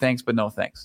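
ordinary talk

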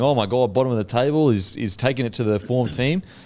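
ordinary talk

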